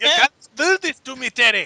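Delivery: put-on Scottish accent. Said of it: "I should be able to do a Scottish accent".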